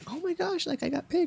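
mock thrilled, very high, girlish gushing delight. Retelling an episode where girls are called forward at callbacks: imitating excited girls. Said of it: "They're all excited".

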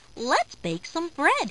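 ordinary delivery

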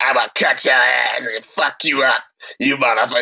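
low, raspy, throaty menacing voice. Recounting a woman threatening a victim with scissors, imitating her throaty threat. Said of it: "That's how she talking".

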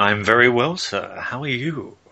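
fake seductive voice. Co-host answering the host's greeting in a put-on sex voice. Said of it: "Is there a reason why you're doing a sex voice?".

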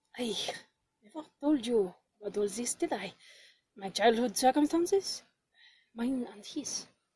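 very low, hushed, nearly inaudible undertone. Reading a character's line aloud while walking beside someone: very low voice. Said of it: "speaks in a voice so low I can hardly hear".

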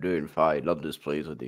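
barely articulated mumble. Voicing a character, the speaker gives the reply mumbled, words swallowed. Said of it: "that's how he speaks ... He doesn't articulate ... He eats his words".

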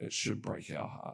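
creaky voice fighting back tears.

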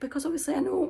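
high voice cracking partway through. Speaker reflects on a book they are reading, voice cracking. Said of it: "voice cracking there".

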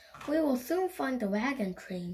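plain reading voice

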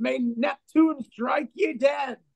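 put-on old man's voice, high shrieking scream in agony. Game master voicing an old man whose arm was just shot off, shrieking curse in agony. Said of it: "he shrieks and writhes".

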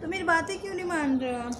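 put-on high, gentle, coaxing voice as if to a small child.

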